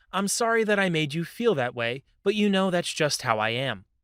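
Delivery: ordinary delivery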